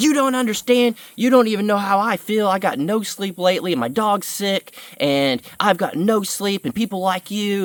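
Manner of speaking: put-on furious yelling, high-pitched and angry. Retelling a woman's reply after he told her how to talk to people, retelling someone yelling. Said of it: "And she started yelling at me".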